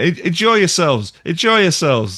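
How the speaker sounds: put-on tipsy high call. Imitating a performer on a live recording, imitating a drunk performer. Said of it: "he sounds the most drunk".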